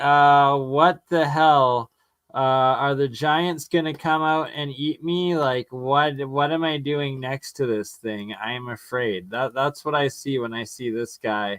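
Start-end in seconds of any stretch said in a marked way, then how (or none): none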